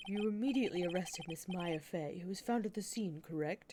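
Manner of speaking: husky, sultry, slightly low voice. Reading courtroom dialogue aloud, voicing Edgeworth questioning the detective, smoky and deep. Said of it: "How's this smoky, kind of deep voice?".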